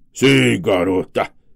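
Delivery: snarling, growling delivery. Reading a story aloud, the huge bearded man answers the girl: growling. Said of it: "rosnou o homenzarrão".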